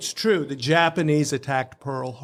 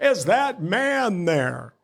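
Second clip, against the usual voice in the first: slow, drawn-out, half-yelled mild yell; 4 semitones higher than usual. Retelling a phone call where the caller screamed at him: imitating Burwell Putnam screaming. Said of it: "he's screaming at me, top of his lungs".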